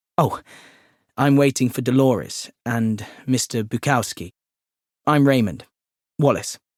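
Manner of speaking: ordinary delivery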